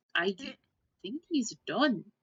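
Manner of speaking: put-on woman's Scottish or Irish accent. Voicing a woman character in a role-play scene, female irish or scottish accent. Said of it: "sort of this female sort of uh, Rush or Scottish accent".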